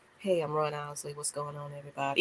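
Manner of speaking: very low, quiet, flat monotone. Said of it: "It was a little monotone".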